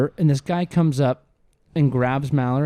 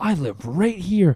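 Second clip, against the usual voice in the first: put-on angry rant, higher pitch; 3 semitones higher than usual. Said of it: "He was going off".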